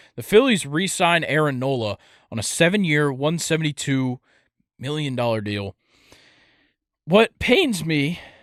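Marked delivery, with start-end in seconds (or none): 7.1-8.2 voice cracking mid-phrase, pitched up and raised. Discussing the Phillies re-signing Aaron Nola, voice cracking. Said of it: "I just voice cracked".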